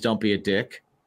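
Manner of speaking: plain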